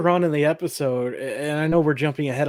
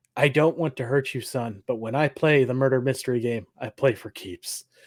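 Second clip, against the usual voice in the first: very serious, grave, quieter put-on voice; 3 semitones lower, 3 dB quieter than usual. Retelling what a man tells a sad boy, in a very, very serious voice. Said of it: "says in a very, very serious voice".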